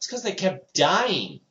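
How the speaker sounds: mock, high-pitched shouted quip. Recounting what they yelled out while someone talked about MacGyver, retelling a yell. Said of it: "And I yelled out".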